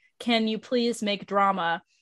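ordinary talk, nothing marked

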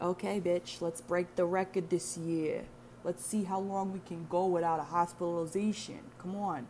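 put-on Italian accent. Retelling a pep talk to oneself about staying out of hospital, in a put-on Italian accent. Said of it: "I don't know why I do that accent to motivate myself".

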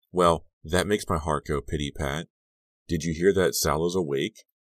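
ordinary delivery

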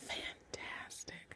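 soft, breathy whisper full of awe.

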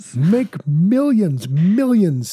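infomercial pitchman voice. Joking that a pitch sounds like a 2 a.m. infomercial, a speaker uses an infomercial pitchman voice. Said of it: "Sounds like an infomercial at 2 a.m".

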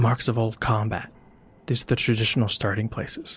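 voiced stage whisper. Narrating a scene, a character speaking in a whisper. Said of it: "Aurora whispers".

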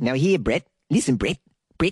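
put-on New Zealand accent, called out. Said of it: "I could do a New Zealand accent".

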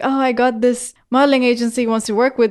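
mock excited, eager, bursting delivery. Retelling telling parents about a modeling agency offer: imitating own excited announcement. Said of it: "really excitedly went up to my parents".

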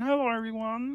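cartoon frog voice. Recalling doing voices at thirteen, the speaker shows off a Kermit the Frog impression. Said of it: "Listen to my Kermit impression".

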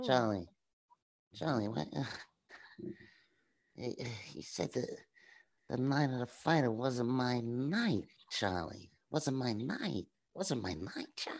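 dorky, low-pitched voice. Doing a young Brando impression for the others. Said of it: "I can do young Brando too".

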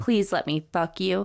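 plain

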